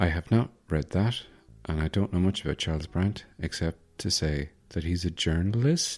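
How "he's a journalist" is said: journalist ends with a rising, questioning tune. Unsure what he knows about the book's author: rising pitch on journalist. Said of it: "My inflection at the end means I'm questioning".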